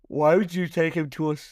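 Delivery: speaking through a yawn. Asking why someone took him to a salon for a haircut, yawning while talking. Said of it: "sorry, I was yawning".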